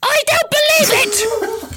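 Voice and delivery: very high, shrill, shrieking scream. Reading a story aloud, voicing a character's line, screaming. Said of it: "Hermione screamed".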